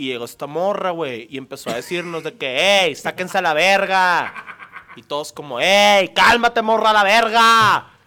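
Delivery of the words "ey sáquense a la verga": put-on northern Mexican shout, drawn-out words, much louder. Telling friends about a girl who yelled at the group; put-on norteño shout, drawn-out words. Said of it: "tienes que alargar las palabras y hablar muy fuerte".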